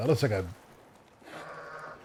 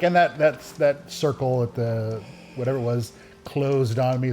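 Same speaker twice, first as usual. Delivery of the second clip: usual speaking voice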